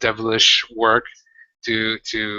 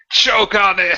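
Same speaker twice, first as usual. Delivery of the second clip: very high-pitched, shrill yell; 10 semitones higher, 4 dB louder than usual. A player's character, grabbed by a tentacled creature, yelling at it. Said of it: "And I just yell".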